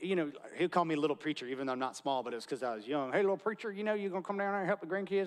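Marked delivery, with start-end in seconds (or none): 3.1-5.3 put-on folksy, pitched-up rural Florida country accent. Imitating a country man who called him little preacher, in his country way of talking. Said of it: "he just talked like that".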